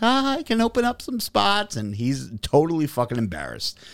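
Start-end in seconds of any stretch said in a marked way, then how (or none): 0.0-1.8 mock laughing through words, very high. Retelling a woman's answer to his question about personal training: retelling her laughing reply. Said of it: "she's laughing and she's like".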